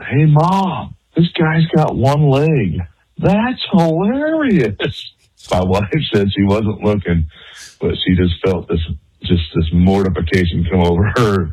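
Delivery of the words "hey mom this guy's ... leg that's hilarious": mock very high, very slow, swooping child's yell. Retelling a five-year-old daughter shouting across a store aisle: imitating a child yelling. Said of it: "my daughter yells out".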